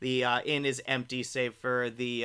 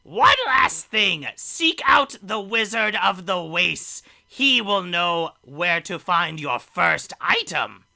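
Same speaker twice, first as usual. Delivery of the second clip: put-on very loud, shrill old hag voice; 6 semitones higher, 9 dB louder than usual. Narrator voicing the hag calling from an inn window as the players leave, hag voice. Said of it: "you hear the hag's voice".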